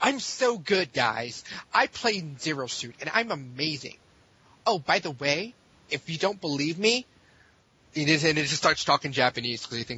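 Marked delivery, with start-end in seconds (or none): 0.0-7.1 slow, nerdy, bragging show-off voice. Imitating a player after describing his voice: nerdier Nick Riddle impression. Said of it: "he sounds like his brother, but, like, more nerdier".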